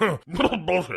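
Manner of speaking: word said as a fake cough. Telling a story where Ernest Borgnine answers Reinhardt: Ernest Borgnine coughing out a word. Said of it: "got a little something in my throat there".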